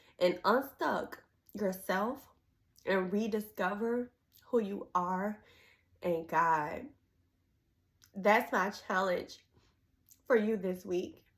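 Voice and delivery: emotional, near tears. Speaker giving listeners her challenge for the week, tearing up. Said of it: "And I'm tearing up".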